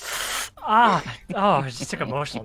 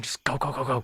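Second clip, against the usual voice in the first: hushed, urgent whisper under the breath. Motioning obvious signs and urging the others to go, whispering. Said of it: "just kind of whispering".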